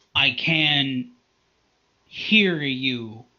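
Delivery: very angry growling voice with drawn-out "can". Narrating a scene, the speaker voices a character speaking to Dazriel in a very angry voice. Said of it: "in a very angry uh, voice".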